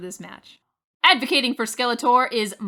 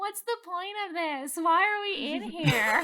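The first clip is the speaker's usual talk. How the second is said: put-on scream, higher; 7 semitones higher, 5 dB quieter than usual. Retelling how a team reacted to falling into a trap: imitating someone screaming.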